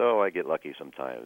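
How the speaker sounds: ordinary talk, nothing marked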